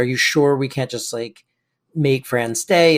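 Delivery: normal talking voice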